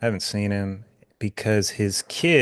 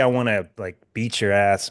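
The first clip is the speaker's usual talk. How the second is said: ordinary talk, nothing marked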